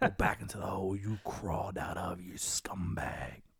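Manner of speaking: very hushed, deep, dark voice, almost under breath. Joking with the other speaker, doing a Batman voice. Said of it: "That would be your Batman voice".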